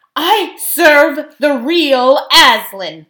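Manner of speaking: booming, loud, slow, deliberate and angry insistence. The speaker answers a scoffer who refuses to be fooled again, angry. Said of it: "said Tyrion angrily".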